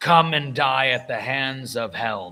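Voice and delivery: loud screaming battle cry. Voicing a paladin attacking enemies: screaming battle cry. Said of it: "I'm gonna scream out".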